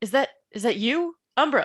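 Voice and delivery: calling out. Playing a frozen, terrified character who sees a creature approach: calling out. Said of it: "and I call out".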